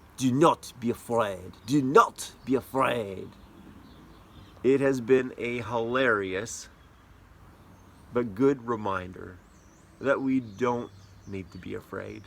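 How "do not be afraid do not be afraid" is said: put-on French accent, said twice. Retelling how a four-year-old son repeats the line: imitating Judah's French accent. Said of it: "even saying it in that accent".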